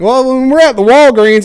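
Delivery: twangy country accent. Describing how the voice changes when talking about silly stuff, in a country twang. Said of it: "my voice kind of gets a country twang".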